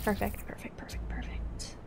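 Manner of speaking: hushed, stealthy whisper, very quiet, barely audible. Sneaking through a stealth mission in a game, whispering. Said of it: "I like how I'm whispering".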